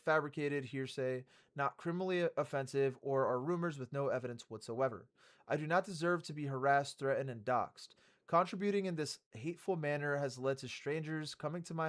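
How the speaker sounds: ordinary talk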